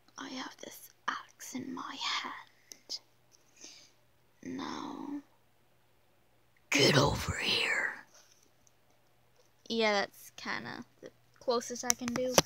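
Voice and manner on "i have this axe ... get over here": slow, breathy, whispered, menacing animatronic creature voice. Attempting how a game character would sound with voice lines: Phantom Foxy combination voice. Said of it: "Phantom Foxy combination voice. A little bit of like a feminine voice".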